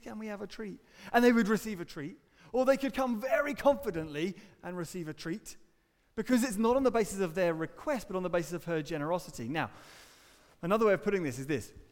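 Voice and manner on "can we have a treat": soft, very nervous, timid voice. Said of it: "very nervously say".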